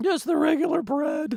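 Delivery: high, timid, meek tourist voice.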